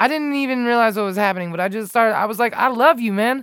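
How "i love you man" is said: high, loud shouting. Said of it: "I started yelling at him".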